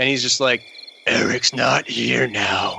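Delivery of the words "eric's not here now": deep, creaky demonic drawl, very slow. Retelling what the fiance said when she asked if he was okay, deep, low demonic voice. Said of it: "some kind of like deep, low demonic voice".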